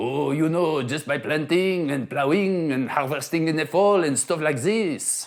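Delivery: put-on French farmer's accent. Quoting a French farmer's answer, as asked: French accent. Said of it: "Should I do it with a French accent?".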